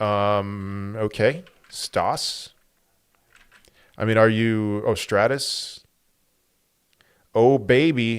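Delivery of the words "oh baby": ironic, unimpressed, sarcastic little cheer. Reading a chat message about a coin's chart: sarcastic. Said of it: "that was a sarcastic".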